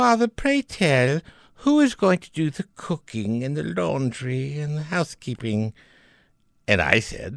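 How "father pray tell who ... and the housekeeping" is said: sugary, sweet-toned voice. Retelling what the daughter Martha asked: imitating a sweet daughter. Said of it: "Martha was always very sweet".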